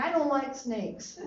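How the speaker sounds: normal talking voice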